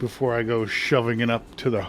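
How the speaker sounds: ordinary delivery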